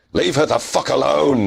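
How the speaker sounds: very high, raw, tortured, furious yell. Narrating a tabletop fight, the player voices his hero stabbing the beast, yelling. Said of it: "he yells".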